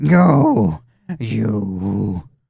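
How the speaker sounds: serpent-like hissed words. Voicing a character who hisses at the players: hissing. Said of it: "she looks at you and just hisses".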